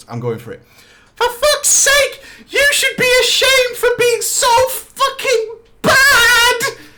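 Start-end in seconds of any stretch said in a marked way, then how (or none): 1.2-6.6 acted, shrill, very high kid-like screech. Retelling a raid, quoting a guy who screamed, in a childish voice. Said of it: "screamed in his twelve-year-old man voice".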